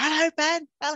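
mock shrill, very high, loud yell. Retell answering a phone call while cooking before going on air, re-enacting shouting at the phone. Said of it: "I was shouting at the phone".

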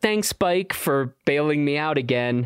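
ordinary talk

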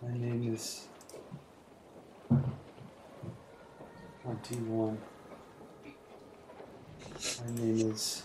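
hushed character whisper. Narrating the scene beside Ren, the speaker voices Gale whispering under his breath. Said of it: "whisper underneath his breath".

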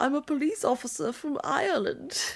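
put-on German accent. Retelling a line from a TV ad: imitating a German accent. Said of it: "she has a German accent when she goes".

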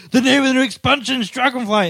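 high, hyped-up, overexcited fan voice. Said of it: "and everyone's gone".

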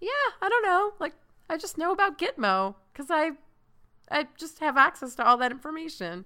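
casual shrugging voice.

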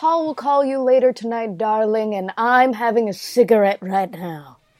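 fully put-on, laid-on mid-Atlantic transatlantic accent. Performing the closing line of a podcast episode, transatlantic accent. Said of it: "a transatlantic accent".

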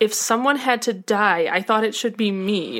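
ordinary talk, nothing marked

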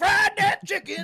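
screeching yell, very high and very loud. Retelling a Family Feud episode, imitating a man screaming. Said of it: "he just kept screaming".

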